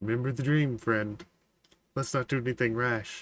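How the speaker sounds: soft, close half-whisper right at the ear. Leaning close to another character's ear to warn him: half-whispering. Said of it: "Just as you whisper that".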